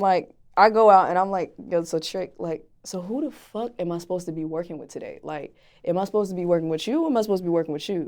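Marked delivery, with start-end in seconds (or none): none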